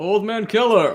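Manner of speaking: very loud, high-pitched shout. Playing a character who arrives and yells to someone: yelling out in character. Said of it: "I'm just gonna yell out as soon as I can".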